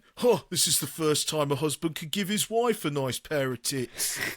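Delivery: acted, playful, joking delivery. Retelling what the speaker said to the seller after buying salt shakers: retold jokey voice. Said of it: "I did it in a jokey voice".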